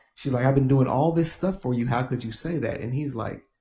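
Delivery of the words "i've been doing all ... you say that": hot, aggrieved, angry, heated outburst. Retelling a woman's reply to her boyfriend, imitating an angry woman. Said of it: "She's angry about it".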